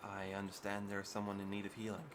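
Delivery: soft, muted, very quiet, hushed voice. Narrating a scene, the storyteller voices a stranger answering at the door: very quiet voice. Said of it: "in a very quiet voice".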